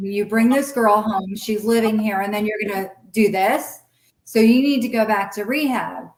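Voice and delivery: ordinary talk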